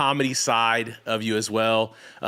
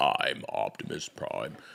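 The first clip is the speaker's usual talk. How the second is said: super low, soft, hushed voice; 11 semitones lower, 8 dB quieter than usual. Prompted by the others to say the line, the speaker obliges in super low Optimus Prime voice. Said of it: "voice is like super low".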